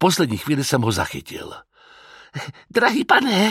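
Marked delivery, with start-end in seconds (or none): 2.7-3.5 very high, exhausted, words exhaled. A man staggers up to the narrator and speaks, breathing the words out.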